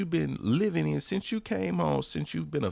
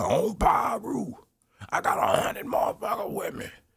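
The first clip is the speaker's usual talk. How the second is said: mock, mild, slightly raised, half-screamed shout; 6 semitones higher than usual. Mocking what the artist says every day: imitating someone screaming.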